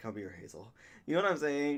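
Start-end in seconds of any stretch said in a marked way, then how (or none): 0.0-0.7 very deep voice, dropped as low as possible. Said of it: "a corpse husband deep voice".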